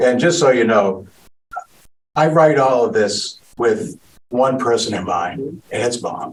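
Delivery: choked-up, emotional voice catching with feeling. Talking about the speaker's mom, choked up. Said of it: "sorry, I get choked up".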